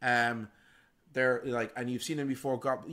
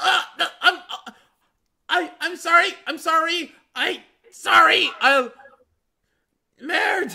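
squeaky goblin voice, very high and loud; 12 dB louder than usual. Voicing a goblin caught and crushed by magic: squeaking goblin voice. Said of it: "you hear the goblin, like, squeak".

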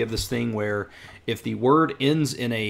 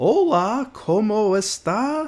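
very high, painfully slow textbook learner Spanish; 10 semitones higher, 4 dB louder than usual. Describing cheap material made for learning, imitating really slow speech. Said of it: "they'll speak really slow".

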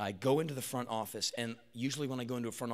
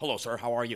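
loud, totally straight, proper, straight-laced polite delivery; 5 dB louder than usual. Retelling meeting a doctor: imitating a very straight-laced doctor. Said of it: "He's totally straight".

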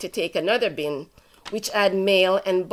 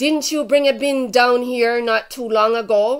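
mock confrontational, accusing shout, loud; 4 semitones higher, 5 dB louder than usual. Retelling what the manager shouted at them: imitating someone shouting. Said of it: "He started shouting at me".

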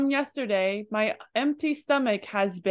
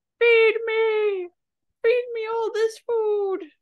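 put-on shrill, demanding, very high, loud shrieking scream; 13 semitones higher than usual. Speaker voices their empty stomach demanding food, mock screaming as their stomach. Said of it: "screaming at me in a loud voice".

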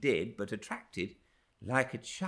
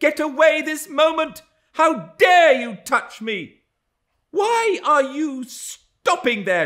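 very high, very loud, shrill, revolted cry of disgust; 14 dB louder than usual. A woman whose curl a man has just stroked cries out in disgust. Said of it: "she cried in a tone of disgust".

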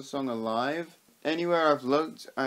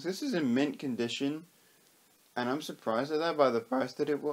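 voice breaking mid-word on "was". Reviewing a record album, voice cracking. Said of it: "voice crack".

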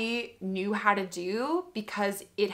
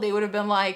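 ordinary delivery

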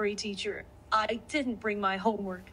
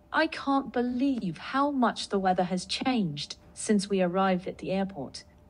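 put-on British accent, read-aloud delivery; 2 semitones lower than usual. Asked to read a practice sentence aloud, reading it in a British accent. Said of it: "With British accent, read this sentence".

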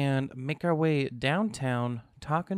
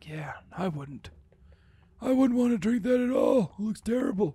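put-on old man voice, pitched up; 8 semitones higher than usual. Voicing what a player would say about the Minecraft water, old man voice. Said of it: "you sound like an old man".

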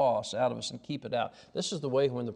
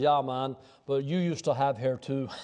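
put-on deep voice with a brogue. Retelling a young guy's reply about having hair, in a deep voice with brogue. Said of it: "that deep voice of that brogue".

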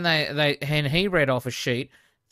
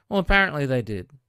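ordinary talk, nothing marked

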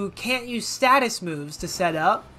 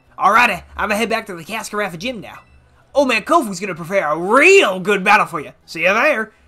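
horrible, badly faked put-on Southern accent; 3 dB louder than usual. Reading a game character's dialogue aloud as Kofu, bad Southern accent. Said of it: "I did a horrible Southern accent".

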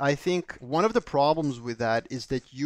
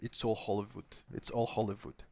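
put-on Serbian-accented speech; 4 semitones lower, 10 dB quieter than usual. Quoting a saying their dad always used, in a thick Serbian accent. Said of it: "with like a thick Serbian accent".

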